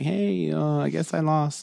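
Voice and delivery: soft, slow, high, sheepish and embarrassed. Retelling how Goku admits losing: imitating an embarrassed Goku. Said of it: "Goku's a little embarrassed".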